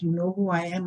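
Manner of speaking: plain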